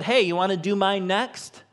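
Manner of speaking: playful, teasing, light and offhand joking tone. Retelling what a woman jokingly asked a man pulling weeds, retelling a joking remark. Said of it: "she jokingly said".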